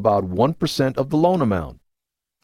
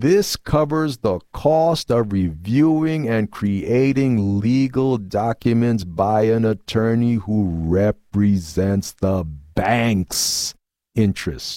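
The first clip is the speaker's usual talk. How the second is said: slow, careful, deliberate, spelled-out delivery; 3 semitones lower than usual. Speaker repeating an explanation for viewers, said again slower. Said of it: "I'm going to say that again slower".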